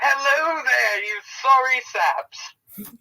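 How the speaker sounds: very high, loud yell. Tabletop player's character yells out to everyone he can see: yelling out. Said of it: "I would just like to yell out".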